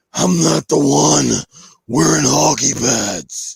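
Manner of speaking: rough, creaky, scraped-out masked-hero voice. Retelling a movie scene in a parking garage, the speaker does a Batman impression. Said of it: "That's a really good impression".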